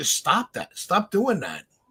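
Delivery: put-on frustrated screaming outburst, swooping pitch. Retelling reacting to double plays during a game: imitating screaming at the tv. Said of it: "I'm screaming at the T V".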